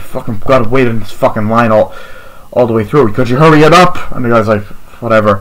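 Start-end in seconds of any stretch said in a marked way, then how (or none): none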